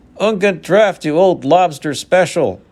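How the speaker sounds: cheerful call. A tall human calls out to someone across the main square, cheery. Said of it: "a cheery voice echoed".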